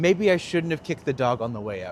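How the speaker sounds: usual speaking voice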